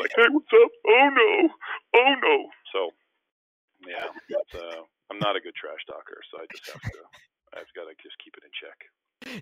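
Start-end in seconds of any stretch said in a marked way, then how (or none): 0.1-2.3 acted, shrill, very loud, high mocking teasing whoop. Retelling how a buddy makes fun of him: mocking imitation of a friend. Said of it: "my buddy still makes fun of me".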